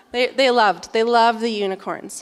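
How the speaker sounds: normal talking voice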